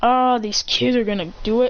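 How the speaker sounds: ordinary delivery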